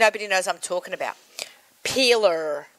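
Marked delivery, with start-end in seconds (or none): 1.8-2.6 "peeler" pronounced with an American accent. Saying the word so people know what she means: american accent on "peeler". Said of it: "I have to say it with an American accent".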